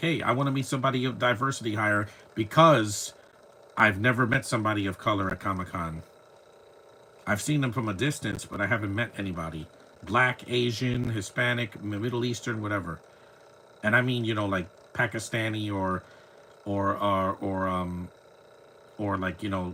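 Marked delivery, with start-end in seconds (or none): none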